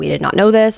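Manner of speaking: ordinary delivery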